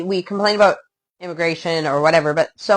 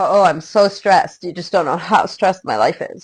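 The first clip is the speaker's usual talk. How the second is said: self-pitying complaining tone. Mocking people who talk about their first world problems, in a mock self-pitying complaint. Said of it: "talking about our first world problems as if like".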